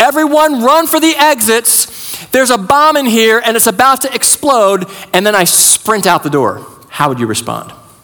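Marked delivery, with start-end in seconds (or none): 0.0-4.9 high, frantic, panicked shouting. Recounting what you yelled from the stage to the audience, retelling a frantic yell. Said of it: "I just started yelling".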